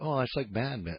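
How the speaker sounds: dead-serious, very low, deep voice. Retelling how Norm answered with not a smile: imitating Norm, completely serious. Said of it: "looks at me completely seriously with not a smile".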